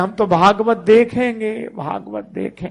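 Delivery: put-on high, loud whining crying child voice.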